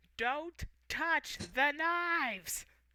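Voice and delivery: high, dragged-out words. Voicing a character shouting from upstairs: NPC shouting.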